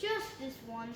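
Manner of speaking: ordinary delivery, nothing marked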